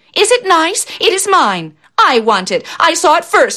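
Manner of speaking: high-pitched, drawn-out crying out. Reading a story aloud, voicing a stepsister's line, crying out. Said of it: "cried the other".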